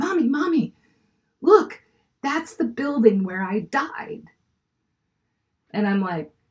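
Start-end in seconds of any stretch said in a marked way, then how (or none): 0.0-4.2 mock eager, high, swooping, excited little-kid chatter. Retelling a young son's words from the back seat: imitating an excited child. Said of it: "he got all excited".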